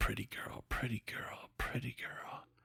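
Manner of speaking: very quiet, very soft whisper. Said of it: "I say it very quietly".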